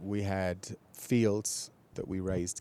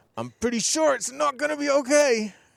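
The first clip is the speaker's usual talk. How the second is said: very loud, very high, rough, through clenched teeth; 11 dB louder than usual. Retelling own words to worried onlookers, imitating speaking through gritted teeth. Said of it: "through gritted teeth I keep telling them".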